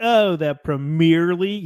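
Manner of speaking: slow, drawn-out, teasing, mocking American accent. Retelling how a Liverpool fan made fun of the speaker: mocking an American accent. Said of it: "he made fun of my accent".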